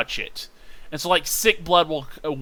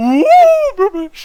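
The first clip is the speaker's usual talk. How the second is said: put-on commercial voice, higher and louder; 12 dB louder than usual. Naming an evil creature type for fun: Cookie Crisp ad voice. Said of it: "I'm gonna say it like Cookie Crisp".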